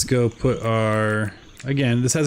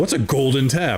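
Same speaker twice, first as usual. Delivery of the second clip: put-on cocky tone, higher pitch; 4 semitones higher than usual. Retelling an earlier misreading of a task, imitating own cocky tone. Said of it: "I was so cocky".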